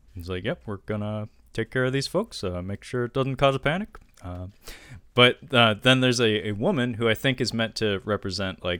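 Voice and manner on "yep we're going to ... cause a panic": dry, steady, pressing-on cadence. Continuing to retell the official's words on request: Obama voice. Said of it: "that's definitely his cadence".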